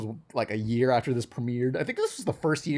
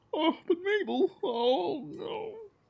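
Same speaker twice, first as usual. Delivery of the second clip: very high, alarmed character impression. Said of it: "Can you do a Dipper impression?".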